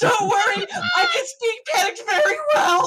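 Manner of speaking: shrill, very high-pitched yelling. Voicing the captain answering a panicked crew member: captain yelling back. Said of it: "the captain yells back at you".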